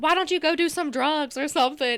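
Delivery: angry, ranting tirade. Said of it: "She was going off on this lady".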